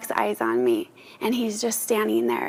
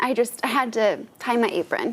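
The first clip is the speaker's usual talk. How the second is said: ordinary talk, nothing marked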